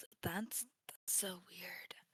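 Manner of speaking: barely audible, very quiet, hushed mutter under breath. Voicing a character reacting to a strange shell: under her breath. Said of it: "says that under her breath".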